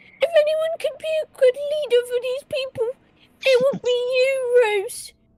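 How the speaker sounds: acted crying voice, slow and teary, you drawn out. Speaking in character to Rose about leading these people: tearful in-character voice. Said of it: "please don't cry".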